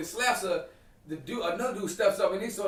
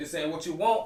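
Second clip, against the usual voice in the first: ordinary talk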